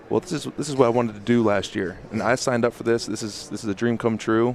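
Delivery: ordinary talk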